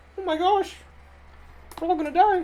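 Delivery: very high, squeaky, half-hearted panic. Imagining a serious world-ending disaster announced in Morty voice. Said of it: "being said in Morty's voice from Rick and Morty".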